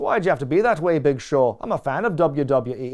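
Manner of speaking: put-on slipping into an Irish-sounding accent. Retelling what a boxer said to a wrestler in the ring, Ricky impression sounding Irish. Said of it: "It sounds Irish".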